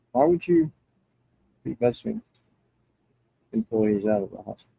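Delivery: muffled, muted speech. Speaker on a call raises a question to another man, voice muffled. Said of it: "your voice got really muffled there".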